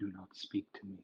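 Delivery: very quiet, oddly soft, under-the-breath voice. Speaker retells how a man leaned forward to say this, very oddly quiet voice. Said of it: "in a very oddly quiet voice".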